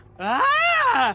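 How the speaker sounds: sudden scream of shock. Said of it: "Why are you screaming?".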